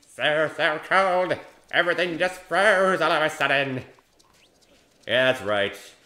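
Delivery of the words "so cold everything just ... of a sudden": loud, high, slow, goofy skeleton voice. Speaker slips into the Papyrus voice he still likes to do. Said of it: "I still like my papyrus voice".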